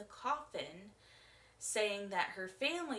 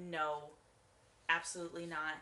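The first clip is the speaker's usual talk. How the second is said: ordinary talk, nothing marked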